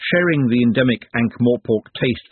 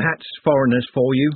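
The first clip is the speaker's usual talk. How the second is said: plain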